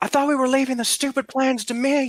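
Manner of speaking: very high, loud, in-character shouted outburst. Reaching a spot where an ally was, in character: in-character shouting. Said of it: "he's gonna shout out".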